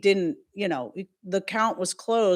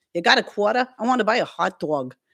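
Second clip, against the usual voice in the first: put-on New York street-talk accent; 2 semitones higher, 4 dB louder than usual. Showing the accent a teacher taught the class, in a New Yorker accent. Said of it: "like a New Yorker accent".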